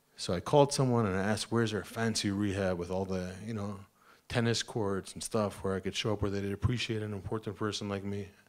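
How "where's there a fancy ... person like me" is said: ordinary delivery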